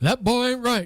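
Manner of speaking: high cartoon sitcom dad voice. Showing how Hank Hill says it after being asked, in a Hank Hill voice. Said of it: "How does Hank Hill say?".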